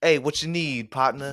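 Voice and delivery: put-on smooth doctor voice. Imitating a private doctor greeting a patient: imitating a smooth doctor.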